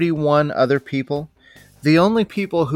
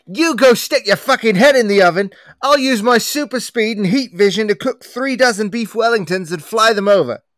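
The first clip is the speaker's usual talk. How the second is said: loud, high rant in a bad British accent; 6 semitones higher, 4 dB louder than usual. Acting a sketch scolding a cook: Gordon Ramsay impression. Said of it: "The best Gordon Ramsay impression anyone has ever done".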